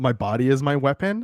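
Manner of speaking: ordinary talk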